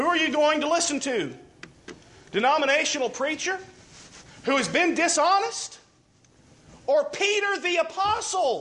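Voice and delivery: high, forceful, insistent, emphatic delivery. A speaker pressing a point to an audience, yelling. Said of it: "Sorry if I'm yelling".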